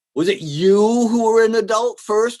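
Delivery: "you" hit hard with contrastive stress. Illustrating a young man's question to his father, contrastive stress on you. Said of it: "what in English I'm doing with the contrastive stress".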